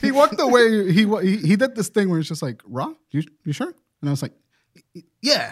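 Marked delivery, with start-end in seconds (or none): 2.6-3.7 put-on concern, quieter. Retelling a man checking whether the speaker was sure; imitating a concerned tone. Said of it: "He looked concerned".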